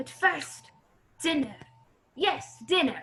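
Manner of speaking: put-on German accent in a villain voice. A nazi baron, having addressed his uncle, announces dinner: german accent. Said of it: "He speaks with a German accent".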